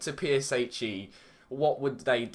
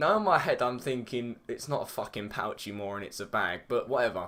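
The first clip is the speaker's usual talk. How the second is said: ordinary delivery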